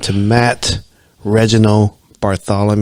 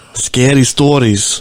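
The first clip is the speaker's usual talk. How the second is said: put-on Russian accent, higher; 3 semitones higher than usual. Repeating a phrase as a joke: put-on Russian accent. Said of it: "like I'm Russian or something".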